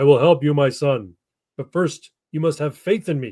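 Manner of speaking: mock grand, stately, majestic godlike voice. Telling a joke, voicing the answer to a falling climber: majestic booming voice. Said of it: "A majestic voice boomed through the gorge".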